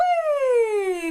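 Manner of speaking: gentle, very high, drawn-out whee. Voice lesson, imitating a kid going down a slide: soft, high and gentle voice. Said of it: "it's that softer, kind of more um, high and gentle place in your voice".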